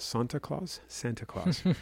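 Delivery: put-on European accent. Telling listeners about a coming market rally; European accent. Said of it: "i went a little bit european there".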